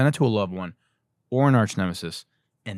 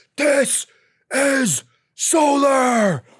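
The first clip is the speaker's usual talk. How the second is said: acted, shrill, very high, loud battle cry; 5 dB louder than usual. Mocking a salesman who thinks he's a war hero: mock King Leonidas war cry. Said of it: "this motherfucker thinks he's King Leonidas".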